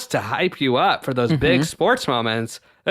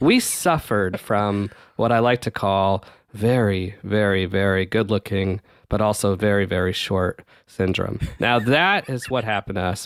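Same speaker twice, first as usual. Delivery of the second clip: low, dropped narration voice like a segment host; 6 semitones lower than usual. Explaining what happened to them in a geek corner segment: voice gets real low. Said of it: "As my voice gets real low".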